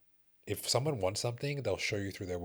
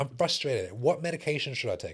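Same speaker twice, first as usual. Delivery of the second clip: the most broken English; 5 semitones higher, 4 dB louder than usual. Retelling a woman asking him which medication to take, imitating very broken English. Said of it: "In the most broken English ever".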